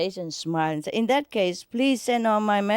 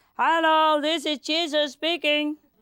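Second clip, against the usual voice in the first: mock high shout with all his might; 9 semitones higher than usual. A man plays a joke on a woman, shouting down at her: retelling a full-power shout. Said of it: "he shouted with all his power".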